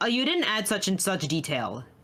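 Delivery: plain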